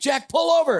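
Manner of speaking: shrill, very high, frantic screaming. Retelling how his father reacted near a cliff edge: imitating a scream. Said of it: "he starts screaming at me".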